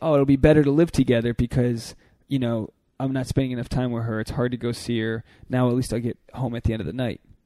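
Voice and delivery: normal talking voice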